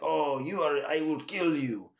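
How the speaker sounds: fake Russian accent in a villain voice. Show how a movie villain talks, in a fake Eurotrash Russian bad-guy accent. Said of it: "doing the fake Eurotrash accent".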